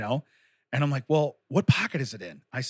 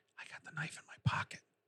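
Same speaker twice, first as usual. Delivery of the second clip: very quiet, hushed, breathy whisper; 14 dB quieter than usual. Retelling what he said going through the metal detector: imitating a whisper. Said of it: "He whispers to me".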